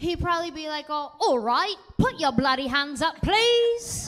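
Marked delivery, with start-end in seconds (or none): 0.9-4.1 loud, polite put-on British thug voice. Imagining being robbed by a British thug, the speaker voices him: put-on British thug voice. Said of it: "If I ever got robbed by a British thug".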